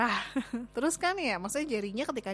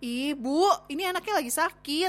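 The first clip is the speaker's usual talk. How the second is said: acted-out exasperated protest, pitched high, drawn out; 7 semitones higher, 4 dB louder than usual. Retelling the speaker's frustration at the mother, as an exasperated protest. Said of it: "Karena kesel ya gitu".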